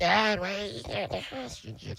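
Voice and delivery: put-on very high, hushed, tiny small-child voice. Recalling himself at eight asking his dad, talking like a four-year-old gremlin. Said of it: "You talk like a four-year-old gremlin".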